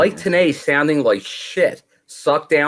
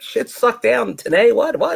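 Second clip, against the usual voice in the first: play-acted very high, drawn-out, slow, baffled disbelief; 9 semitones higher than usual. Retelling watching the line again, retelling own confused reaction. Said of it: "then I'm like".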